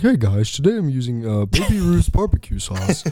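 oddly alien-sounding tech-guy voice. Showing how the real person talks, unlike the film actor: Mark Zuckerberg impression. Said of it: "kinda talks like this".

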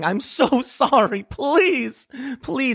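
mock tearful sobbing, high, slow. Retelling how someone bent down and begged for forgiveness: imitating someone sobbing and begging. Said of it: "started sobbing and crying".

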